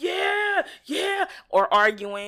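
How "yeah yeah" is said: put-on pumped-up gamer banter, pitched way up, loud. Speaker describing how he talks while gaming with his guys, imitating hyped gamer talk. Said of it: "on the game all hype".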